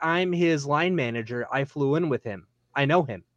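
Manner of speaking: plain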